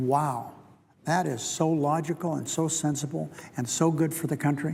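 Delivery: slow, thickly sarcastic, fake approving tone. Responding to the House Republicans' debt proposal: very sarcastic. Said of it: "I've said that very, very sarcastically".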